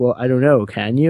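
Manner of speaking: sassy, teasing delivery. Retelling a sassy reply to an autograph request: sassy Ross impression. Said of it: "he's sassy".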